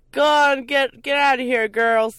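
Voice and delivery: put-on loud, high, gruff, drunk-sounding bark. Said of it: "he said".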